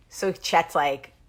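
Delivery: normal talking voice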